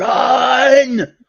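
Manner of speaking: very high, stretched-out, shrill scream. Retelling shouting at the TV at a player: imitating own screaming. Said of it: "I was screaming at my T V".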